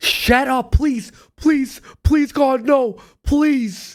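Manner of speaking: high, desperate pleading, repeated over and over. Imitating viewers sick of promotions: mock pleading. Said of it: "people are like".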